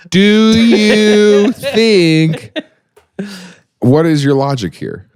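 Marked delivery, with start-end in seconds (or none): 0.1-2.5 very high, exaggerated slow speech, drawn-out "you". Mocking how people talk to someone who doesn't speak English: imitating slow speech. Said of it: "when you encounter someone who doesn't speak English and you go".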